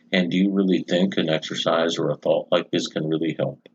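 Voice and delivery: ordinary delivery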